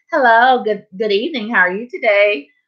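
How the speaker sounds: put-on polite voice. Retelling walking up to the bus driver, imitating own nice polite greeting. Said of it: "so nice and polite".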